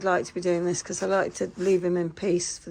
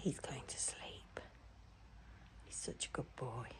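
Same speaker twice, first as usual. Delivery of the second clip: barely audible hushed whisper; 6 semitones lower, 23 dB quieter than usual. Speaking beside a sleeping animal so as not to wake him: whispering. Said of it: "I'm whispering because I don't want to wake him up".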